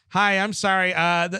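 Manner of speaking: put-on nerdy voice, high-pitched and very slow. Doing his nerd voice from Star Wars: A New Hope: nerd voice. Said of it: "I'm going to do my nerd voice".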